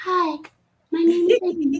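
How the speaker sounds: put-on faint voice, near half-whisper. Retelling meeting Amy, who spoke almost in a half-whisper, imitating Amy's cute faint voice. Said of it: "it sounds just like this. And she was whis- it was so faint that it was almost a whisper".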